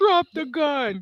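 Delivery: trying to sound tough, comes out high. Retelling a scene where Ellie tries the asshole voice: imitating Ellie's tough asshole voice. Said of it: "Ellie trying to do the asshole voice".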